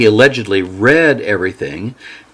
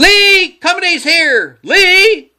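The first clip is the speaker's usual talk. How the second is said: piercing, shrill, very high screech; 4 dB louder than usual. Reading a character calling out that company has arrived, screeching. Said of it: "In a screech".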